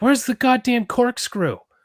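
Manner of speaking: put-on, strange, very high out-of-nowhere yell. Retelling a strange movie scene: imitating Crispin Glover yelling. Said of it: "there's this scene where he just yells".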